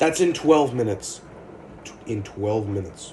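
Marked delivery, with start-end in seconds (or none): 2.1-3.1 abruptly deeper voice, much lower and quieter. Back on stream, talking to Pony, slipping into a suddenly deep voice. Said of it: "Why did I just get a deep voice there?".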